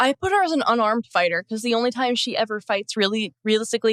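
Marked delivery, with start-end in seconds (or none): none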